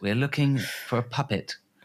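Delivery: high English voice, crackling. Imagining the profiler speaking over the radio, in an english accent. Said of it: "over the radio in that English voice".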